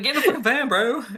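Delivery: screaming. Retelling watching a show: retelling own screaming. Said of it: "I literally was screaming".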